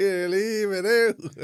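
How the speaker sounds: very slow, loud, high, drawn-out shout. Retelling a clip of a woman shouting at a lad in a street fight: retelling a shout. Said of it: "she shouted at the other lad".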